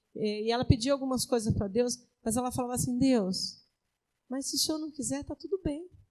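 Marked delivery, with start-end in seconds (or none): 3.0-5.9 put-on sweet, gentle, tender pleading voice, higher and quieter. Retelling a young woman's prayer in her testimony: imitating a sweet gentle voice. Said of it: "com aquela voz tão meiga".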